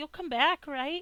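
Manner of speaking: very high, pleading voice with tears held back. Retelling a story, the speaker acts out a girl looking up at him, imitating someone holding back tears. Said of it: "she's trying very hard to make it seem like she's not crying, but she's crying".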